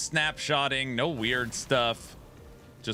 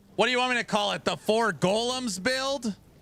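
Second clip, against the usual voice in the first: very high, shrill, exasperated scream in disbelief; 10 semitones higher than usual. Arguing over what to call a build, screaming. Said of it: "I don't know why I'm screaming".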